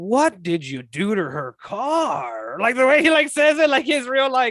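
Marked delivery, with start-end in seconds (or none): 0.0-2.6 very slow, drawn-out, swooping, funny delivery. Retelling a movie scene, quoting a line: imitating Kurt Russell's funny, weird delivery. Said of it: "he says it, like, in such a, like, funny way".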